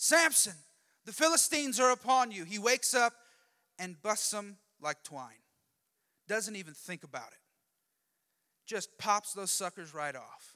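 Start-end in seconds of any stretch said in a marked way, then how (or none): 0.0-2.4 high, loud shouted cry. Retelling the story of Samson, acting out her yell. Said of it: "and then she yells".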